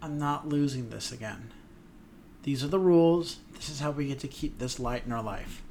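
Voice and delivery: normal talking voice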